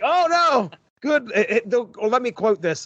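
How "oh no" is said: put-on very high, repulsed alien voice. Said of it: "He's like".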